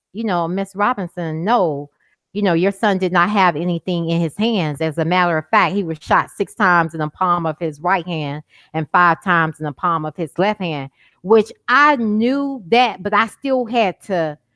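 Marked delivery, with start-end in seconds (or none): none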